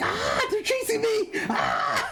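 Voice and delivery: mock very high, frantic, panicked squeal. Retelling a friend's panic in a game: imitating someone screaming in panic. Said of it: "all I hear on his end is screaming like".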